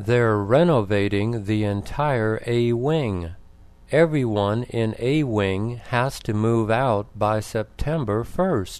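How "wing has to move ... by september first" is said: ordinary delivery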